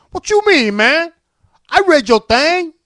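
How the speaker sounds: put-on street voice, very loud, high, shrill.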